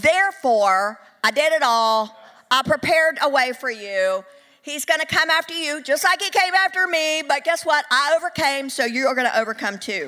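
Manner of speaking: put-on touch of Southern accent. Acting out his words to the listener during a sermon, slight Southern twang. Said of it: "a little southern twang to that".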